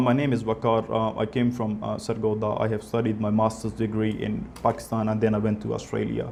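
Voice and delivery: very low, flat, one-note droning monotone. Answering 'tell me something about yourself' as an example, flat monotone. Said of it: "Speaking in the same tone without changing the pitch".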